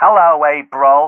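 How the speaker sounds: loud, put-on fake mid-Atlantic accent. Starting a role-play, the speaker greets April in a put-on accent. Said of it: "I think just no accent".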